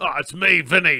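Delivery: put-on cross, worked-up, angry Australian accent. Asked by another speaker to do it again: Vinny impression. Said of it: "He just sounds like an angry Australian".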